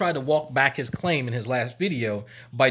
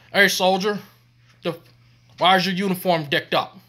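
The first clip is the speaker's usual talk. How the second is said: sergeant major bark, loud and high; 6 semitones higher, 5 dB louder than usual. Acting out a skit where the sergeant major questions a soldier: acting as a sergeant major. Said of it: "it's Sergeant Major".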